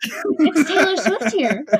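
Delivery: slow, drawn-out computerized robot voice with laughter. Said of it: "the computerized voice".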